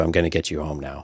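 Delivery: put-on calm, fatherly voice. Quoting a character's line about getting her home: calm fatherly Obi-Wan voice. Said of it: "very calm and, I mean, again, kind of fatherly".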